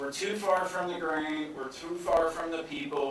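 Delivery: ordinary delivery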